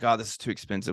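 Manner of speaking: ordinary talk, nothing marked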